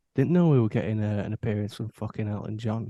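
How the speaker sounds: imitated whisper. Retelling what a brother said at a funeral: imitating a whisper. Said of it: "whispered to me".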